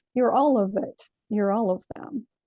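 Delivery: ordinary delivery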